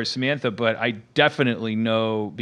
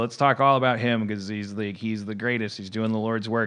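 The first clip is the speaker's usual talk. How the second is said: usual speaking voice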